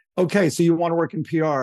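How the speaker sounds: ordinary talk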